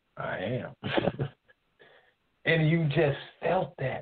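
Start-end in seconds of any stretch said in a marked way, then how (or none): 0.2-1.3 mumbled, whispered mutter under the breath. Retelling a reply to a wife's complaint: imitating a mumble under the breath. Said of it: "I would mumble under my breath".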